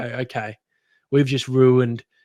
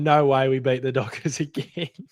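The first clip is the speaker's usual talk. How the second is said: put-on laughter with disbelief. Retelling own reaction at one point of the game: retelling own laughing disbelief. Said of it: "I was kinda laughing, going".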